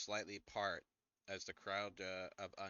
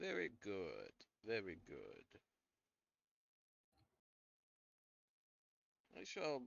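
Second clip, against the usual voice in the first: grand, swooping, regal emperor voice; 3 dB quieter than usual. Voicing Strahd congratulating a player character: Strahd voice. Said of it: "It is why I'm talking like this".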